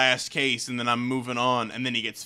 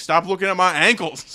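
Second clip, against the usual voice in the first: very touchy, defensive, raised, high-pitched retort; 7 semitones higher, 7 dB louder than usual. Retelling a movie scene where a character gets asked about ankles: imitating a defensive reply. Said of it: "real defensive".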